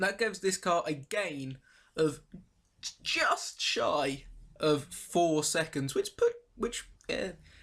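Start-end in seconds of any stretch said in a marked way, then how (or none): 5.9-7.3 voice leaps very high, words lost. Comparing a car's upgraded times when the voice suddenly goes very high. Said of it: "my voice just went very high".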